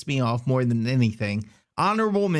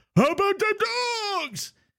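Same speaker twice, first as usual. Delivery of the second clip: mock very high, drunken holler. Recalling a Louisiana Tech fan yelling at him as he walked by, imitating a drunk scream. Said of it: "screams out at me, drunk as hell".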